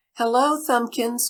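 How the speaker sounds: cheerful call. Reading a story where a voice calls to a passer-by, cheery cry. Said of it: "cried a cheery voice".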